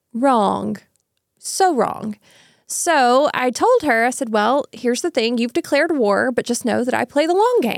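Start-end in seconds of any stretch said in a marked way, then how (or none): none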